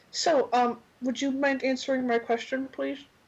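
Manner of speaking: speaking through a mouthful. Voicing a character who eats grass while asking her question: talking with mouth full. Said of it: "and with her mouth full".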